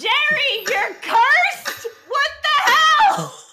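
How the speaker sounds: very high, loud yell, climbing in pitch. In a roleplay, a character bursts through the door at jerry; yelling.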